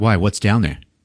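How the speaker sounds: ordinary delivery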